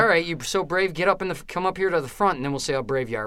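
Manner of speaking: ordinary talk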